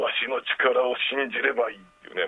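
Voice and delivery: very low-pitched voice. Describing a character turning around in thunder, quoting his line in a very low voice. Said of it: "ものすごい低い声で言うんですよ".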